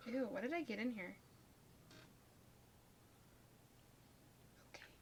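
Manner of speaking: quiet whispering. Doing makeup beside another speaker, whispering. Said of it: "Stop whispering".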